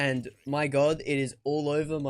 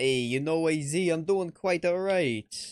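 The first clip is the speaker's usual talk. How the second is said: put-on New Yorker voice, fake New York accent; 2 semitones higher than usual. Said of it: "With that New York accent".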